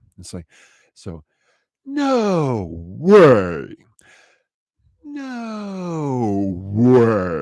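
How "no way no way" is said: very slow, swooping fall from high pitch. Showing a voice exercise on the words no way: slow high-to-low glide. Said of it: "in slow motion and start high and then go down low".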